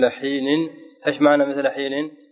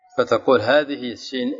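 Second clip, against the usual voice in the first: ordinary delivery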